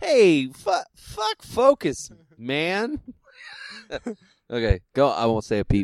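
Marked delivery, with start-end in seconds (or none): 0.0-3.0 very high, very slow, swooping, lazy, sing-song drawl. Echoing the other speaker's line back at him, doing a Lebowski impression. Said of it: "You sounded like the Lebowski just then".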